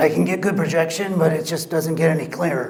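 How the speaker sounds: very raspy, hoarse, rough voice. Demonstrating grades on a voice quality scale, in a very raspy rough voice. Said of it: "The rough voice is very, very raspy".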